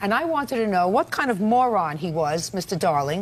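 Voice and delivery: ordinary delivery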